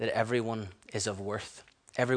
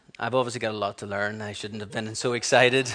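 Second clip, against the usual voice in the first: normal talking voice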